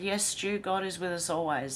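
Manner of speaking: ordinary talk, nothing marked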